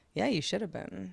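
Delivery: mock deadpan delivery. Retelling a woman's answer in a conversation: retelling a deadpan reply. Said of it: "she like looked at me deadpan and she's like".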